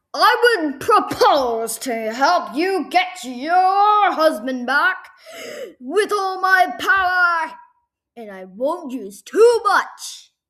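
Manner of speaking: very loud, booming put-on voice. Retelling what a man said to her, trying to do his voice. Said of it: "I can't get his voice correctly, so I'm just gonna try. He was like this".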